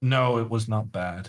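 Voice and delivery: sad, downcast tone. Asked whether a move in the game was bad, the speaker answers: sad. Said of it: "Why do you sound so sad".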